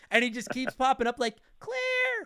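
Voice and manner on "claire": whiny, high-pitched put-on voice. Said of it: "he sounds more feminine than Claire".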